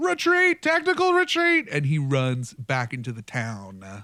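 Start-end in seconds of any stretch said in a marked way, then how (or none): 0.0-1.7 very high, loud shouted yell. Game narrator voicing a guy who yells at the three players: yelling. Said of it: "the guy looks at all 3 of you and yells".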